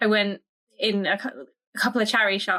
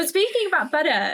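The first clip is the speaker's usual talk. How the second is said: Essex-accented speech, pitched up; 7 semitones higher than usual. Chatting with the other speaker, in an Essex accent. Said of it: "I am going to say that with my Essex accent".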